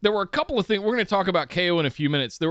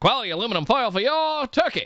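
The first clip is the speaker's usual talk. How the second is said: 1950s promo announcer voice, much higher pitch; 5 semitones higher than usual. Continuing a sponsor tag for the segment on the show: fifties announcer voice. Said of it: "sounding like a fifties announcer".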